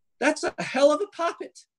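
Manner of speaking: squeaky, very high-pitched, loud voice. Voicing a rough-looking character in a tabletop game: very high-pitched voice. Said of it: "in sort of a very high-pitched voice".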